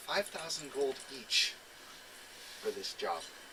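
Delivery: dropped, quiet voice. Game master speaking as Kenshin to the players, Kenshin, voice lowered. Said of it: "he kind of lowers his voice for this".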